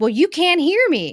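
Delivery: acted, high, loud, irate angry yell. Retelling what a woman who wasn't a customer yelled, mock yelling. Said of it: "she was, like, yelling".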